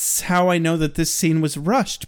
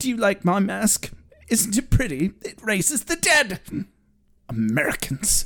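exasperated, fed-up muttered character voice; 3 semitones higher than usual. Quoting him muttering under his breath while driving: Giles voice. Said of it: "you'll read it in the Giles voice".

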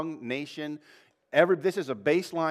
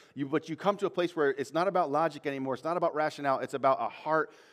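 ordinary delivery

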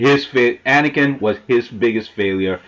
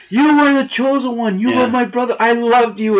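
mock pleading, much higher; 12 semitones higher than usual. Retelling Obi-Wan's last words to Anakin on Mustafar, imitating Obi-Wan pleading. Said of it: "Obi-Wan's there just pleading, so emotional".

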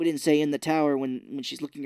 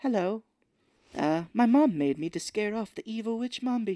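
airy, light, wispy, high character voice; 7 semitones higher than usual. Quoting a character's line while describing him, in a light, wispy voice. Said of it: "a real kind of light, wispy voice".

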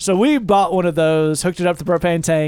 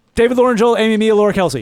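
really panicked, rushed delivery; 4 semitones higher, 4 dB louder than usual. Asked to read out listener names like an emergency, really panicked reading. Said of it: "but in a really panicked way".

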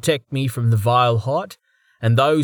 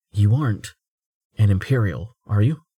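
voice dropped down low; 3 semitones lower than usual. A narrator reads a man's question to the man he just heard named, lowered voice. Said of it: "He lowered his voice".

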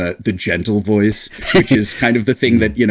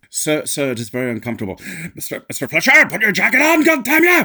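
very high, building rage, put-on angry sea captain voice; 9 semitones higher than usual. Doing the angry Hopkins as the captain scolding Fletcher: angry Anthony Hopkins impression. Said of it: "the angry Hopkins".

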